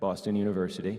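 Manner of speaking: voice dropped low. Speaker telling about a professor who influenced them, in a lowered voice. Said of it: "(LOWERS VOICE)".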